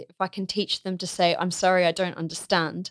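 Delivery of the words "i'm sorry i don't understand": ordinary talk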